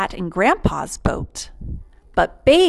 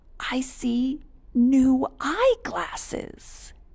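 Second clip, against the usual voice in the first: softly whispered, much higher pitch; 6 semitones higher than usual. Reading a story, a grandfather peers around a tree at a hiding child, whispering. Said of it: "he whispered".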